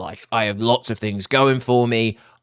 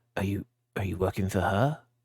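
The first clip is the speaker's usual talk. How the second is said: voice dropped a touch, lowered and quieter; 2 semitones lower, 9 dB quieter than usual. A character looks down and questions someone, in a lowered voice. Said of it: "lowers his voice a little bit".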